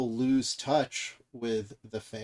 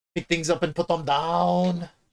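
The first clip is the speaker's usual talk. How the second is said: loud gym-trainer voice, belted out, "down" drawn out long; 6 semitones higher, 6 dB louder than usual. Trading Arnold impressions with a friend, the speaker tries another Arnold impression. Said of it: "I'm trying to do my best, Arnold".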